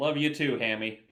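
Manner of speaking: mock-affectionate, sarcastic tone. Playing a character, replying to another character, sarcastic. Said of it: "be like sarcastically".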